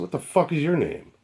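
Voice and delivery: put-on angry retort. Retelling a confrontation with a man who demanded his name, acting out his own anger. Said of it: "and now I flip out".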